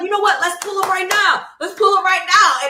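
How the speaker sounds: put-on New Jersey accent. Retelling a friend's urging to drive over at night: imitating a new jersey accent. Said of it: "It sound like somebody from New Jersey".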